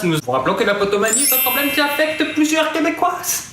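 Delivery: high, fast, rattled-off delivery.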